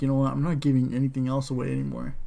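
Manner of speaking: usual speaking voice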